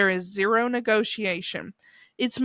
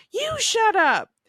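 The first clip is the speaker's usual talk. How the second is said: mock shrill, very high, loud yelled shout; 13 semitones higher, 4 dB louder than usual. Retelling how the baby nephew shouts back at the speaker: retelling an even louder shout. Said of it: "he responds even louder".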